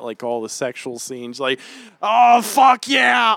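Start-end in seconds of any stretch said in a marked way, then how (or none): 2.0-3.4 put-on drunk woman's scream, higher and louder. Retelling a drunk woman in a cafe during a film: imitating a drunk woman screaming. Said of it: "screaming at".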